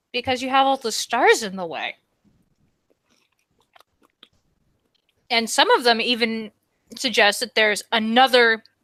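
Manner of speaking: talking while eating, mouth full. Answering another speaker's question while eating pizza, talking with mouth full. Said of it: "I have my mouth full".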